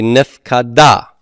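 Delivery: nifkada, stress on final syllable -da. Explaining where the accent falls in a nifal participle: stress on last syllable of nifkada. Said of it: "the accent's going to go to the end".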